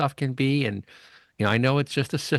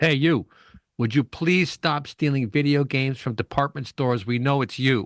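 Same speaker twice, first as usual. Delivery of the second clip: police officer voice, shouting; 2 semitones higher than usual. Retelling a cop calling from a car window: imitating a cop yelling. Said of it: "rolls down the window and yells at this vagrant".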